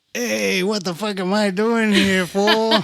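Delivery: put-on Mexican accent. Joking about playing family roles in a game: Mexican drunk uncle voice. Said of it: "Your Mexican drunk uncle".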